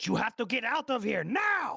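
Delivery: very loud, high, urgent shout. Playing a character who calls out a warning: shouted warning call. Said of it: "he's gonna just do a call out and say".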